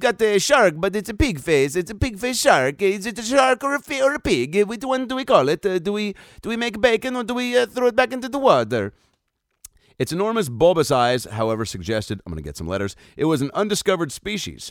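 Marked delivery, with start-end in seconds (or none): 0.0-8.9 put-on Italian accent, much higher, slower. Voicing people looking at a pig-faced shark, in an italian accent. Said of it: "that's my Italian accent".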